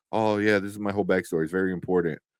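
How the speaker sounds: ordinary talk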